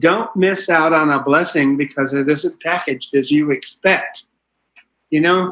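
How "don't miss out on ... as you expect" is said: plain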